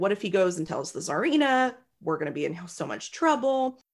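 ordinary delivery

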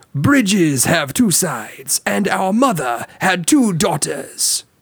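clumsy, terrible put-on French accent, high, slow, drawn out. Voicing a line for the other player to guess: terrible French accent as Lumiere. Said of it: "guessing my terrible accents".

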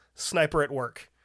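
ordinary delivery

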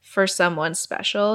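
normal talking voice

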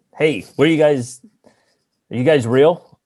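high, loud yelling, calling out. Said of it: "I yell out".

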